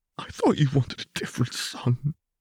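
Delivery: hoarse croaking whisper. Zef speaks to his father, in a hoarse croak barely above a whisper. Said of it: "in a hoarse croak, barely above a whisper".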